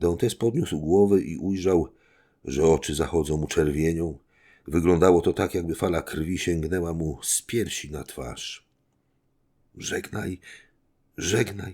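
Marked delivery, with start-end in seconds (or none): 9.8-11.7 convulsively trembling moan, quieter. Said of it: "jęknął Faria z konwulsyjnym drżeniem".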